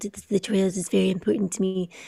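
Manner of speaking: bad fake German accent, nearly whispered. Describing an audiobook narrator's voice: terrible Werner Herzog impression. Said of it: "that's a terrible impression".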